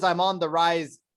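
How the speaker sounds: ordinary delivery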